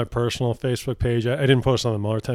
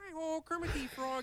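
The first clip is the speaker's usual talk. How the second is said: very high-pitched voice kept hushed and quiet; 17 dB quieter than usual. Telling someone how a man at a hearing sounded, imitate him in a Kermit voice. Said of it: "he really does sound like Kermit".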